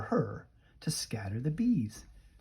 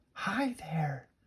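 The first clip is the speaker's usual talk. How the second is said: tiny, shrunken, small little voice, pitched up; 5 semitones higher, 5 dB quieter than usual. Narrating a story, Annie greets a warrior: small voice. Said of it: "Annie said in a small voice".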